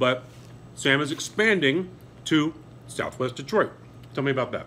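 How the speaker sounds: muffled speech with mouth full. Talking with sam about his cheesesteak shop while eating; talking with mouth full. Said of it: "hate to talk my mouth full".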